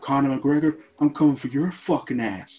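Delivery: put-on American accent. Quoting a fighter's famous callout in an American accent. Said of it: "I apologise for my American accent".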